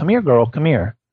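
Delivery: sweet, pleasant, friendly calling voice. Retelling calling her to come back: imitating a pleasant calling tone. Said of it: "in a pleasing, pleasant tone".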